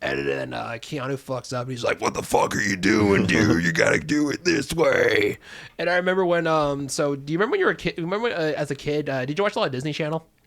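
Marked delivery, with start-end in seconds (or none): 2.0-5.4 one of the deepest voices, very deep and slow. Retelling a football coordinator scolding Keanu: deep voice imitating Mark Ellis. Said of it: "He kinda talks like this".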